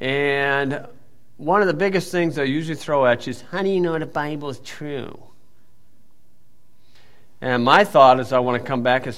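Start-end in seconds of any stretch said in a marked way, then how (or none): 3.5-5.2 whiny, complaining, whining tone. Speaker mimics young people's argument at Purdue, mocking whiny voice. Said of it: "with the same whiny voice".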